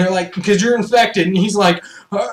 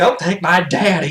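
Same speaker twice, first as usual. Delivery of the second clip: put-on young girl voice, pitched low; 4 semitones lower than usual. Retelling a zombie movie scene, imitating the girl in the movie. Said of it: "The girl's like".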